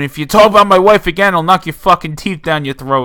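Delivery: loud, mock dead-serious menacing tone, sounding genuine. Retelling a wrestling feud promo, Miz making a threat look real. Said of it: "making it look like a shoot".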